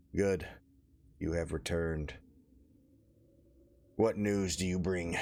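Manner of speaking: injured-sounding, labored, words forced out. Voicing a bandaged, bloodied figure greeting returning players: wounded figure with punctured lung. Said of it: "sounds like one of those ribs is punctured his lung".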